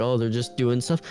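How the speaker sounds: usual speaking voice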